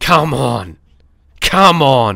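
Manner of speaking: fired-up, really aggressive tone, slow. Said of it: "just that really aggressive tone".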